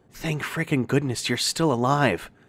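breathy, barely voiced. Lita, hearing the narrator croak her name from nearby, breathed. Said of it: "she breathed".

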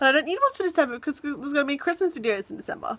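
hyperactive, hyped-up chatter, rattled off very fast. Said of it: "Why am I talking like this? I'm, like, hyperactive".

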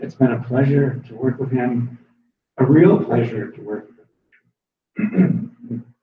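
ordinary delivery

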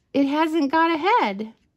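said through laughter. Rabbit looks at Little Bear and Otter's unfinished snowman: laughing.

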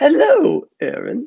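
cheery, bright, very high voice. A narrator reads a character greeting an approaching figure, bright. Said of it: "Eva said brightly".

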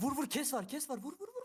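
high, excited yelling.

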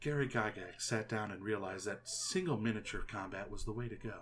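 very soft, low, hushed public-radio storytelling. Talking about D&D history in a soft monotone NPR voice. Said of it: "It'll be very soft and monotone".

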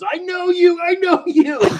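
shrill, very high, drawn-out yelling at top of lungs. Retelling a man in a Walmart line recognizing the speaker: imitating a man yelling. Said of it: "starts yelling at the top of his lungs".

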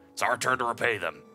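put-on little cute monster voice.

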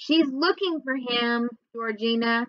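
plain

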